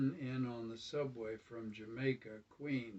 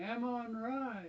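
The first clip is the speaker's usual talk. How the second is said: squeaky, very high voice crack; 11 semitones higher than usual. Reading a first-person story, the narrator voices their order with voice cracking high. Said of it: "my voice cracked to a high-pitched tone".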